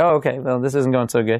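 ordinary talk, nothing marked

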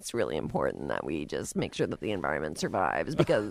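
very creaky voice with heavy vocal fry. Imitating a woman heard speaking on KCBS, with heavy vocal fry. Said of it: "that vocal fry to the point where they're literally not making any other sounds".

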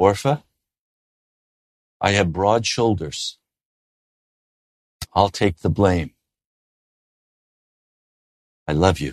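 tender, very low, gentle delivery. Recalling how his father answered his mother's blame, retelling Dad's quiet, gentle reply. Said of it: "he would say very quietly and gently back to her".

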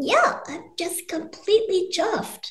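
small high-pitched voice.

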